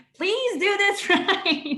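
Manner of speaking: bubbly, high, very slow and drawn out. Retelling how they ask students for corrections, imitating own bubbly tone. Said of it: "I'm so bubbly".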